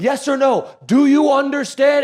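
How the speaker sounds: very slow put-on yelling. Retelling how a cop yelled in a man's face, retelling a cop's yell. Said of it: "he's just yelling in this guy's face".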